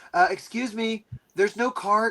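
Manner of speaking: slow, lost-sounding high voice. Retelling how a newcomer on their first day asks: imitating a new person. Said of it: "who's the new fish".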